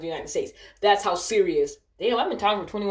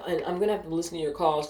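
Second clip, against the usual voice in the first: ordinary talk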